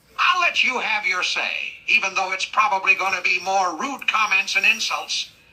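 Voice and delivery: normal talking voice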